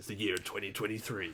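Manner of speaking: soft, hushed US movie-narrator voice. Podcast host tries an announcement, in US Transformers narrator voice. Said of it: "the traditional like U S Transformers narrator voice".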